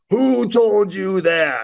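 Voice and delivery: high, drawn-out yelling. Retelling how the coach kept yelling in the speaker's face: retelling a yell. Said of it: "he just kept yelling in my face".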